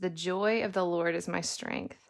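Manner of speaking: ordinary delivery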